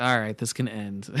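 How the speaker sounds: ordinary talk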